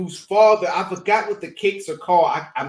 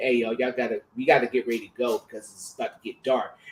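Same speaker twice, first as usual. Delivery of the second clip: low, very nice gentle and kindly tone; 7 semitones lower, 6 dB quieter than usual. Retelling what the pastor said to the group, imitating Pastor Bill's very nice tone. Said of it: "he said in a very nice tone voice".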